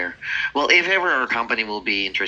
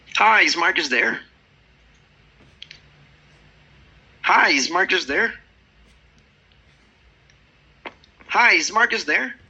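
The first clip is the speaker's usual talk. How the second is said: very high, animated, energetic voice; 10 semitones higher, 4 dB louder than usual. Told by a coach to pick up the energy, retrying the phone opener, more energy. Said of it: "that three times in a row with a little more energy".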